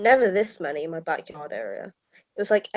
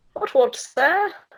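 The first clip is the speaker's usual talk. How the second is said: mock Cockney accent, higher and louder; 10 semitones higher, 5 dB louder than usual. Repeating a posh greeting as a joke, put-on accent sounding Cockney. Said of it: "Whenever I do Australian, I sound like a Cockney".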